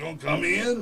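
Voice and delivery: rough, creaky, low, rasping voice. Retelling meeting Macho Man at his door: Macho Man voice. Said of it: "he talks like that for real".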